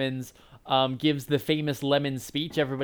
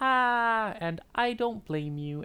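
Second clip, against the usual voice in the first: syrupy cute voice, much higher pitch, slower; 8 semitones higher than usual. Describing enemies tossed into lava, demonstrating their lines in a syrupy cute voice. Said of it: "with these like syrupy cute voices".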